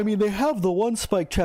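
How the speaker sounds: talking through a yawn. Explaining game traps to the audience at the end of a long day; yawning while talking. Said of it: "I apologize for yawning".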